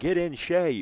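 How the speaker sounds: high-pitched, shrill yell. Retelling what a father yelled when a football player went down, retelling a yell. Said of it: "some Pillow father yelled".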